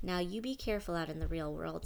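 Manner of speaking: usual speaking voice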